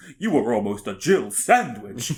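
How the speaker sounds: put-on vampire count voice. Quoting a game character's line, done in a Dracula voice. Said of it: "I said that like Dracula".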